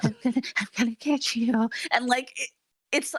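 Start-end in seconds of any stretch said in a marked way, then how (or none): 0.0-1.7 creeping, unsettling, sinister creepy villain menace. Retelling a creepy movie villain's scenes: imitating a villain talking quietly. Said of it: "talking really quiet".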